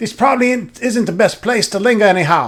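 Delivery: bad put-on Scottish accent. Speaker voices a character's lines while admitting to a bad Scottish accent. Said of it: "my Scottish accent is fucking terrible, but try to mimic the voices".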